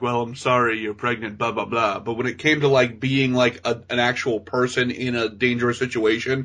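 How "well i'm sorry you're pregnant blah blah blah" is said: stiff, wooden, awkward, lifeless delivery. Imitating an actor playing a doctor: imitating a stiff doctor. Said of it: "the stiff doctor".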